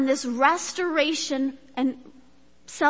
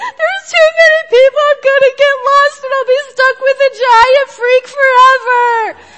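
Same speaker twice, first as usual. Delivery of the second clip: put-on very loud, high tearful young child sobbing; 10 semitones higher, 12 dB louder than usual. Retelling a first grader at Disney World gates, imitating a crying child. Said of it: "your first grader starts to cry again".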